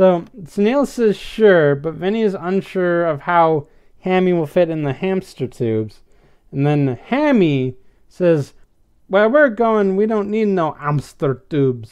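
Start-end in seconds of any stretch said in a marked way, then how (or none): 9.1-11.9 put-on thick French Canadian accent. Retelling a story's plot, voicing Hammy in a thick old French Canadian accent. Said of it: "he does have this thick old French Canadian accent".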